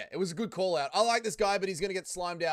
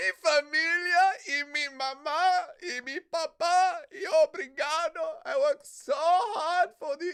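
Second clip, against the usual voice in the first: very high, very slow, drawn-out, tearful, gushing delivery; 11 semitones higher, 5 dB louder than usual. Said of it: "yeah, mate, we get it".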